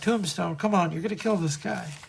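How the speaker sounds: imploring, begging, pleading tone. Retelling a comic scene where a character begs a fighter: imitating a plea. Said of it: "Joe is pleading like".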